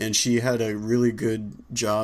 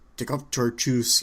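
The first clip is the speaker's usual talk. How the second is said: put-on thick, heavy Filipino accent; 2 semitones higher than usual. Retelling what a security agent told the speaker, in a thick Filipino accent. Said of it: "he had such a thick Filipino accent".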